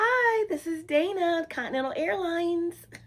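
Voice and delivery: very high-pitched customer-service phone voice. A former airline reservationist recalls answering calls; phone voice. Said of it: "That was my phone voice".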